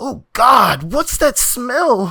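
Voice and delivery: very high, breathless, gasping cry. Narrator reading the story as Fabian finds the egg in the trash, Fabian gasping. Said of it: "Fabian gasped".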